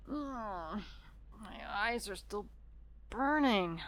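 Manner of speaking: slow, halting pained groaning, broken phrases, "my" drawn out. A character talking to someone who isn't in the car: pained groaning. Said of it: "[Pained groaning]".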